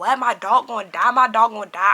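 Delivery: put-on tearful, can't-believe-it, crying disbelief. Retelling hearing the dog might die: retelling own crying disbelief. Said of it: "I'm crying".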